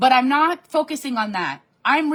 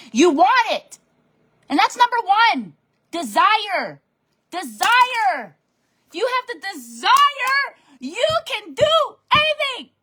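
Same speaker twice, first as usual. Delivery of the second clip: pumped-up, excited, high-pitched motivational yelling; 8 semitones higher than usual. Speaker addressing sixty people watching him, in excited yelling. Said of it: "Stop yelling, [name]".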